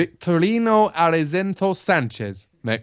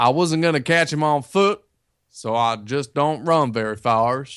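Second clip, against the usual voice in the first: put-on plain generic American accent; 3 semitones lower than usual. Reading aloud a man's quote from a newspaper story, in a generic american accent. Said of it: "do normal generic American accent".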